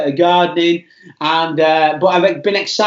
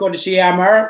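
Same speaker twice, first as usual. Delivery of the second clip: terrible, clumsy put-on Northern Irish accent. Greeting a viewer by name on a live stream: terrible Northern Irish accent. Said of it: "That's a terrible Northern Irish accent".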